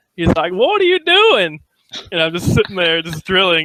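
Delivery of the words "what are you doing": put-on very high, heaviest, thick Southern accent. Retelling a man on the Xbox Live mic asking what he's doing; strong southern accent. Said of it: "the most southern accent ever".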